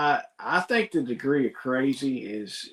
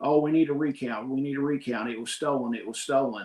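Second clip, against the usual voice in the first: plain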